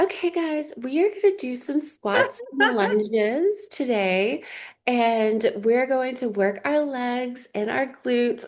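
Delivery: totally fake, high, little baby voice. Retelling how she talked in her old videos, in a little baby voice. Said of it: "has a little baby voice where she talks like this".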